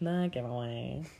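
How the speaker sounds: goofy, silly, put-on dopey dumb voice. Repeating the other speaker's words as a joke: dumb voice. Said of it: "I was just doing a dumb voice".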